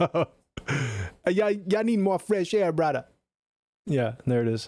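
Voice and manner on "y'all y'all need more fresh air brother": very slow, drawn-out, high put-on Caribbean accent. Speaker demonstrates mimicking a Caribbean voice: mimicking Caribbean accent. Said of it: "the mimic of the Car- of the Caribbean voice".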